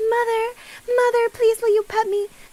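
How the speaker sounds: put-on small, squeaky, high little-boy voice. Retelling what the cat Cooper asked for: squeaky Cooper voice. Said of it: "Mister Cooper was being a squeaky little boy".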